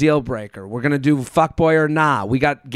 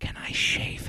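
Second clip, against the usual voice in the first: soft, hushed, breathy whisper. Reading a story aloud where a date whispers a question: imitating a whisper.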